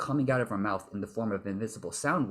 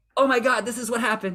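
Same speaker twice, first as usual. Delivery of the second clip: sudden, high, loud excited gush; 12 semitones higher, 8 dB louder than usual. Explaining how people's voices change, the speaker demonstrates someone getting excited. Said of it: "when they get excited".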